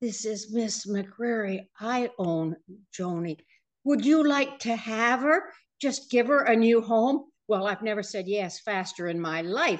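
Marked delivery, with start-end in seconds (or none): 0.0-7.2 put-on elderly woman's voice. Retelling a phone call offering Joni a new home, imitating Miss McCreary's very old voice. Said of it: "a very old voice said".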